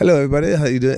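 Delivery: put-on English accent, pitched a bit high. Describing a story trivia host greeting everybody, in an English accent. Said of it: "something about an English accent already".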